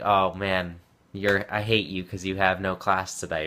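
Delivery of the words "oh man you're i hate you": plain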